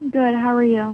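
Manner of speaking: flat, tired, low energy voice. Answering a greeting from the other speaker on a call: low energy voice. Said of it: "You sound kinda low energy".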